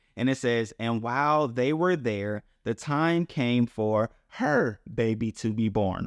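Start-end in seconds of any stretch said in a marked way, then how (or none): 2.7-6.1 heavy emphasis on the word "her". Reading a Bible passage aloud, emphasis on 'her'. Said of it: "I put the emphasis on her for a reason".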